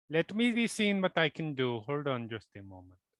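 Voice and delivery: put-on Indian accent. A player speaking as their character through a sending stone; indian tech-support accent. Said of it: "You just went to like Indian tech support".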